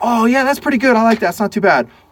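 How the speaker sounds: middling, mildly keen approval. Speaker demonstrates three enthusiasm levels on camera, now medium enthusiasm. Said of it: "Medium enthusiasm level".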